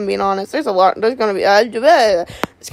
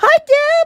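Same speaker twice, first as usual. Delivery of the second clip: very high-pitched, little voice; 4 dB louder than usual. Greeting deb, in a very high-pitched voice. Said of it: "I went so high pitched there".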